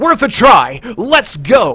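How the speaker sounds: very loud, very slow, swooping, drawn-out overeager reading. Mocking a game character's line delivery: imitating an overly eager line reading. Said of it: "he would not have that inflection in his voice".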